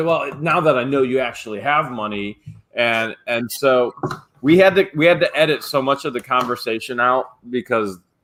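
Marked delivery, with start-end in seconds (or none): none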